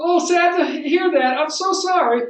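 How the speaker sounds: very high, upbeat, cheery sorry that sounds mismatched. Showing how a person's words and face don't match: smiling while saying sorry. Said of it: "How come you're smiling when you're so sorry?".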